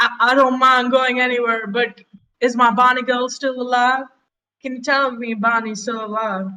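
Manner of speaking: high, begging, pleading character voice. Voicing a captured character pleading with the adventurers: pleading character voice. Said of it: "pleading at all".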